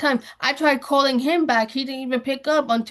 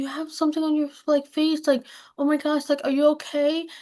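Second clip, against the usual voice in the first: put-on, feigned worried, concerned tone; 2 semitones higher than usual. Retelling how she pretended to worry about his face: retelling feigned concern. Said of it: "But I played it, like, the way that I played it".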